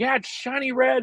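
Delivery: gleeful, excited screaming, pitched way up, high. Speaker recounts answering his guys while rushing, retelling own yelling. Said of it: "I'm just screaming and yelling".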